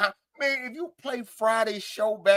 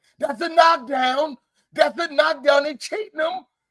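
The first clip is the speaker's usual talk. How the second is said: high, heated, excited yelling shout; 7 semitones higher, 4 dB louder than usual. Retelling watching a fight backstage: imitating his own yelling. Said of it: "I get to yelling".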